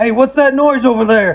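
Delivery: called-out voice. Voicing another guard who hears a noise, calling out. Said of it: "you hear another guy".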